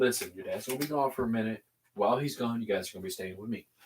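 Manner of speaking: mock very quiet, soft, soothing, comforting voice. Describing how he tells young kids they'll stay with him, acting out a comforting tone. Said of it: "he's still saying it in a comforting tone".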